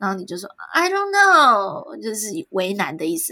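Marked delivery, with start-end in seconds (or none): 0.7-2.0 exaggerated American, overdone dramatic delivery. Showing how Americans would say the reply: exaggerated American-style tone. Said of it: "是在夸张什么？".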